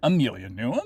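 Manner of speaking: rising question-like intonation on him. Showing how the phrase would sound as a question: rising question intonation. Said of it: "it doesn't sound like".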